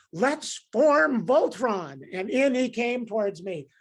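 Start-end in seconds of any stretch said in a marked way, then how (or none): 0.2-2.0 loud hollering, yelled call. Retelling a man yelling at you from his car window, retelling a yell. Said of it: "he yelled at me".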